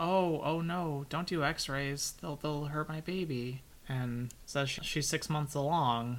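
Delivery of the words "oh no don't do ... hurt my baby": mock-sweet voice, higher pitch and slower. Speaker retells what an elderly woman said, imitating someone speaking sweetly. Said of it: "she just very sweetly says".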